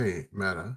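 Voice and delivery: hushed whisper. Calling quietly to a companion named Meta: whispering.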